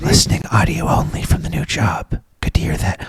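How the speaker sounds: hushed whisper. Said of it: "Why am I whispering?".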